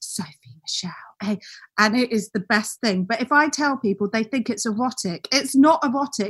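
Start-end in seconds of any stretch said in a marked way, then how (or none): 0.0-1.4 soft, hushed, breathy ASMR whisper. Imitating an ASMR video's greeting: whispering like Sophie Michelle. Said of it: "she whispers, she goes".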